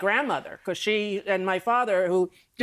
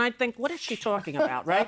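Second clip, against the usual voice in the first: usual speaking voice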